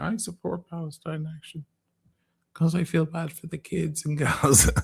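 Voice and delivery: put-on very high old-woman voice. Retelling a protest arrest, the speaker quotes an eighty-six-year-old woman, imitating an old woman. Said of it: "This eighty-six year old woman going".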